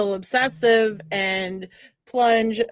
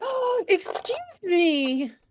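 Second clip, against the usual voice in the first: very high, swooping, put-on startled surprise; 10 semitones higher, 3 dB quieter than usual. Tabletop game player, in character as initiative is called, feigned surprise. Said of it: "act surprised and be like".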